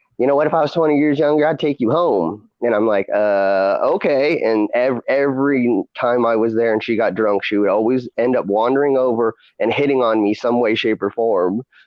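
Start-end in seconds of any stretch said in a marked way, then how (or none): 0.2-2.5 put-on Chicago accent with raised pitch. Retelling a woman at a bar hitting on the speaker, imitating Cookie's Chicago accent. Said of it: "because she was from Chicago".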